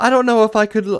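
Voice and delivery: high, fast, snooty put-on villager voice.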